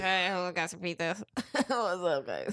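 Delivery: put-on slow, drawn-out, wasted drunk voice. Acting out a pizza delivery man dressed as Papa John: imitating a drunk pizza man. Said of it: "super drunk as shit".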